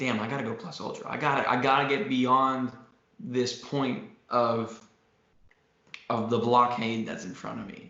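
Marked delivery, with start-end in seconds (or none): none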